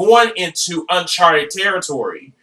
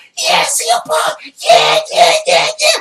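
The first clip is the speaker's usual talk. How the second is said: screaming, higher. Retelling watching a fight on TV: imitating own past screaming. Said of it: "screaming at the T V".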